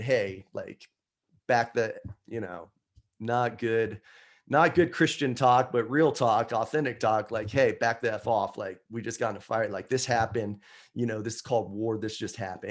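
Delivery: ordinary talk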